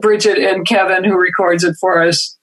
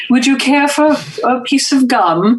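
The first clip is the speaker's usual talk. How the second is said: put-on lofty patrician accent, pitched higher; 6 semitones higher than usual. Retelling an accent affected in fourth grade: imitating a patrician accent. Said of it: "started affecting that, uh, patrician accent".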